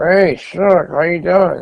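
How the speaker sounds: high, slow words pushed through clenched teeth. Imitating a man greeting him, talking through his teeth. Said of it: "Like through his teeth".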